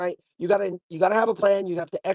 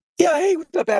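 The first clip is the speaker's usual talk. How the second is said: lost, worn-out, nearly gone voice, very high; 9 semitones higher, 4 dB louder than usual. Greeting the others on a call while sick: lost voice from being sick. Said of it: "I'm sick, so I've lost my voice".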